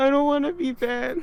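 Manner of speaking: put-on acted very high pitched, crying child voice, tearful. Retelling own past plea after starting to cry: imitating own past crying plea. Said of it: "And I started crying".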